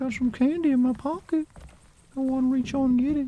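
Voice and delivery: very high cartoon old man voice. Joking that a game character sounds like Family Guy's old man: old man from Family Guy voice. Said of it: "like, the old man?".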